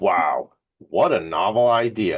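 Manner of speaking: heavy sarcasm, very slow and drawn out. Commenting to guests on a charity's founding story: heavy sarcasm. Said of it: "Dripping with sarcasm for you all today".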